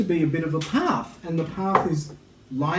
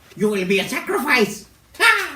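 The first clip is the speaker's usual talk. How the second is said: high, very slow, drawn-out pixie character voice; 9 semitones higher, 4 dB louder than usual. Voicing a pixie threatening the players: voicing a pixie. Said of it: "Pixie, just so you know".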